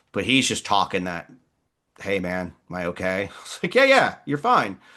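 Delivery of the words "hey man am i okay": cool, even, very calm delivery. Retelling an injured man on the ground asking if he's okay, imitating calm talk. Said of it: "he just starts talking real calm".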